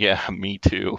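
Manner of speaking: snarky, sarcastic, quickly fired-off tone. Retelling a man's reply to a contestant, imitating a sarcastic answer. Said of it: "fires off this sarcastic answer".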